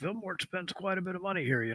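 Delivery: quiet high mutter. A storyteller voices the barkeeper Odo, who throws a glance, muttering under his breath. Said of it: "He then under his breath he goes".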